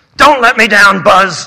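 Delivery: very loud, roaring delivery. A man confronts the narrator, roaring. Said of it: "he roared".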